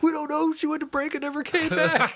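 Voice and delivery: high, mocking put-on voice.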